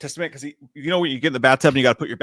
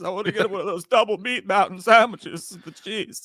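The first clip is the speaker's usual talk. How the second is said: put-on quavering voice, higher pitched; 7 semitones higher than usual. Imitating RFK during a hearing, wanting food: quavering RFK voice. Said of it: "his voice is quavering".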